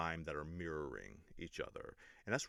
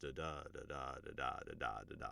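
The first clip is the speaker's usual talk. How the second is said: soft da-DA beat, stress on every second syllable. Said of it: "the description of how natural speech flows".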